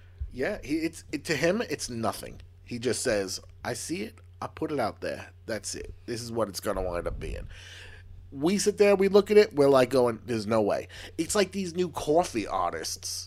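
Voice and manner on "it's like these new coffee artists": Long Island housewife-style accent.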